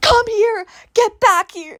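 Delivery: shrill, high, loud scream. Retelling a girl chasing a capybara at night: imitating someone screaming. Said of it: "she was screaming".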